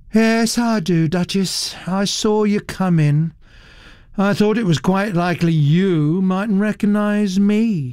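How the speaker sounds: lazy drawl with total indifference. A young woman answers a duchess who says she seems forgotten, in a lazy, indifferent drawl. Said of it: "She drawled the words lazily, with a complete indifference of manner".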